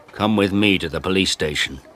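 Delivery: ordinary delivery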